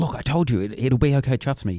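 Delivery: put-on whisper. Retelling a guy taking a call standing close by, imitating someone whispering. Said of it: "he's, like, whispering".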